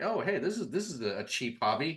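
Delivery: gushing naive delight.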